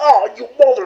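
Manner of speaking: shrill, loud, very high yelp of pain. Voicing a guard headbutted in the nose as he yells: yelling in pain. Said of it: "as he yells".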